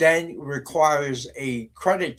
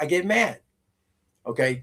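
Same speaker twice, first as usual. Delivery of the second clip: ordinary talk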